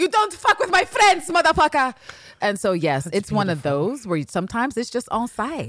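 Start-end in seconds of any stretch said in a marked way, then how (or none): 0.0-1.9 put-on Argentinian accent, pushed way up high. Retelling how a man confronted someone who was rude: Argentinian accent. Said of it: "with his Argentinian accent".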